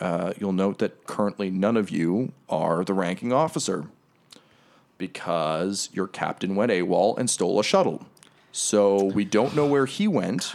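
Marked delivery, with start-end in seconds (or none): none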